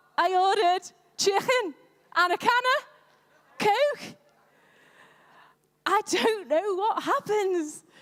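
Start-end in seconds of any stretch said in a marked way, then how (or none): 0.2-4.2 put-on everyday Liverpool (Scouse) accent. Speaker recalling ordering food after moving to liverpool: liverpool accent. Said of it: "And then I moved to Liverpool".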